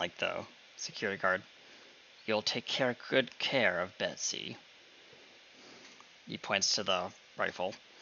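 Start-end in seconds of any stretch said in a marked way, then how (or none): 2.2-4.6 snarling voice, quieter. Voicing a character who hands over his rifle: snarling at the guard. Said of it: "he just kind of snarls at".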